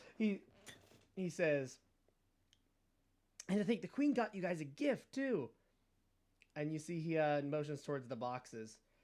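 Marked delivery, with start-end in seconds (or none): 3.5-5.5 put-on Brooklyn accent drifting Southern. Game narrator voicing a character who talks to the players, attempting a brooklyn accent. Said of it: "trying to do my uh, my Brooklyn accent".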